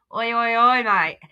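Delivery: attempted Australian accent. Speaker shows how they attempted an Australian accent. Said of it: "I attempted an Australian accent".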